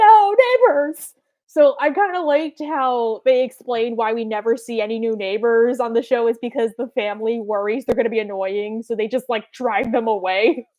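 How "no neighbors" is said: high, loud, slow mock cry. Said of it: "So I'm like".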